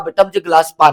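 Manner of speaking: ordinary delivery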